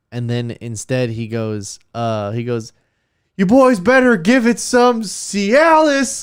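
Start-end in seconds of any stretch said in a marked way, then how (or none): 3.4-6.3 acted shrill, very high shouting. Retelling what a man shouted at him and his brother, shouted. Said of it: "like that, like shouts that like that".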